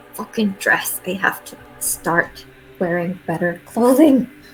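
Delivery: hushed muttering under the breath. Player character relieved the creature stayed asleep, muttering under breath. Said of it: "just mutter under my breath".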